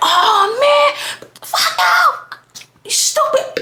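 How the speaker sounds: play-acted, very high, slow, drawn-out angry outburst. Retelling a fight, imitating him going off angrily. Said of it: "Just going off".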